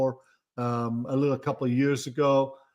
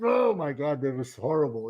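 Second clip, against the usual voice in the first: put-on held-back outburst, stifled gasp. Recalling kids watching you swim, mimic their reaction: retelling a stifled exclamation. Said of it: "I hear these stifled like".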